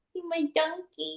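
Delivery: high, very quiet, cutesy dog-talk voice. Asked whether they have a dog voice, demonstrating the dog voice. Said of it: "Do you have a dog voice?".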